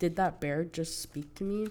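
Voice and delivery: ordinary talk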